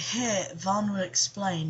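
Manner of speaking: plain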